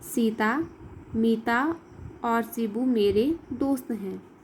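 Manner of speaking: brief, short pause after one word. Reading a sentence aloud to children: short pause after Sita. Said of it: "Sita के बाद अलग विराम का चिन्ह है तो हम थोड़ी देर रुकते हैं".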